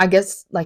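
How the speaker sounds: ordinary talk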